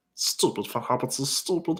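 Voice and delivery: breathy, whispered delivery. Doing a Smeagol impression for viewers: Smeagol voice. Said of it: "There's my Smeagol impression right there".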